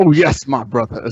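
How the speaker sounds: put-on American southern preacher accent. Joking about preachers in the United States, imitating one in a southern preacher accent. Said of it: "some southern preacher who's like".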